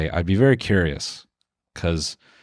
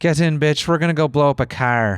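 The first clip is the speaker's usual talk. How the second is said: rough, high-pitched, put-on Irish accent; 7 semitones higher than usual. Showing off being able to do an accent for the episode, in an Irish accent. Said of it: "I can do an Irish accent".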